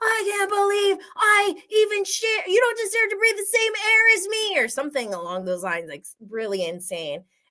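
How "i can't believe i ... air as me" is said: very high, unhinged, out-of-control screaming rant. Recounting a trip from past seasons, acting out Shep screaming at Austin. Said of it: "He's screaming at Austin".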